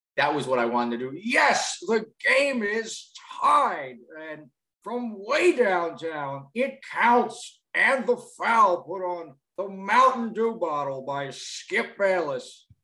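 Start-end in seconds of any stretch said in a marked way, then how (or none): 1.3-12.6 put-on sports play-by-play announcer voice. Showing a first impression of a sports commentator: Marv Albert impression. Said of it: "That's my Marv".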